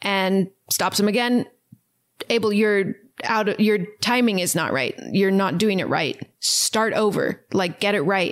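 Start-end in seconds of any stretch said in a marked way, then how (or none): none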